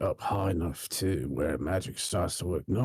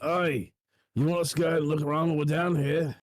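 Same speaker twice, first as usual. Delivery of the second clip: raised, pitched-up yell carrying over distance; 8 semitones higher than usual. A character calls to him down a giant echoey tube, yelling.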